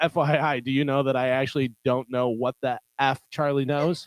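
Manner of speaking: normal talking voice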